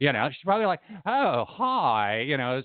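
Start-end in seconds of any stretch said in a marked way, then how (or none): 1.1-2.2 put-on, high valley girl voice. Imagining how a woman's inner voice talks, valley girl voice. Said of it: "She probably talks like a valley girl".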